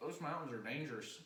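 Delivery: put-on sudden, laid-on drawling Texan accent. Repeating the character's warning about the mountains: imitating a Texan accent. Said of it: "in a completely different accent now".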